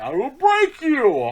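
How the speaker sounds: belted high and loud, swooping pitch, villain voice. Quoting The Dark Knight Rises to a co-host, doing a Bane impression. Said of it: "that voice is so memorable".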